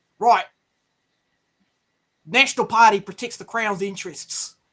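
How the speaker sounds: terrible put-on British accent that comes out Australian. Reacting to something confusing just watched, bad british accent that sounds australian. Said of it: "No, that was not British. That was Australian".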